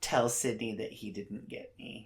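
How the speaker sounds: faint, very quiet murmur, words barely getting out. Retelling a line from a movie scene: imitating a faint, quiet voice. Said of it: "very faintly, like, very quietly".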